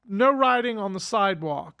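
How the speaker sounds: plain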